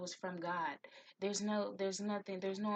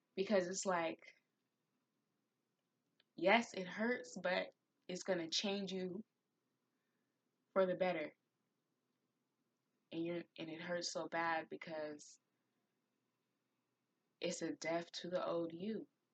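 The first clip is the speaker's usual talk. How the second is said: voice choked up with emotion; 2 semitones lower than usual. Talking to a listener about grief and the death of the old self, getting emotional. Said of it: "I'm getting emotional right now".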